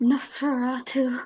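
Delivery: whispering. In a tabletop game, a player's character steps back and speaks: whispered. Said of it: "Just going to whisper".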